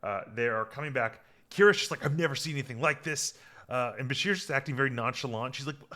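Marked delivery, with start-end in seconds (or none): none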